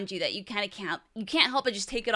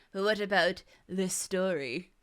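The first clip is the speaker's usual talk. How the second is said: put-on villain voice. Turning from the map to the game's story: Doctor Evil voice. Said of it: "I'm doing the Austin Powers Doctor Evil thing".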